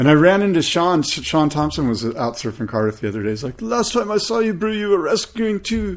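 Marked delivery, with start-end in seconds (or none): 3.6-6.0 put-on high-pitched South African accent. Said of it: "That was a solid South African accent".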